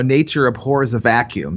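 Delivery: plain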